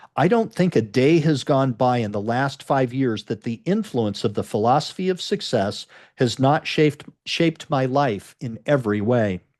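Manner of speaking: normal talking voice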